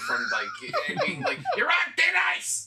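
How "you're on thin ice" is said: put-on angry Brooklyn police sergeant voice, higher and louder. Pretending to be a disgruntled Brooklyn detective sergeant scolding someone. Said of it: "pretending to be a disgruntled Brooklyn detective sergeant".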